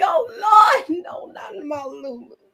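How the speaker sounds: put-on slow, drawn-out elderly churchgoing lady voice. Disappointed in how a show handled a character, speaker laments: old church lady voice. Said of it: "I sound like an old church lady".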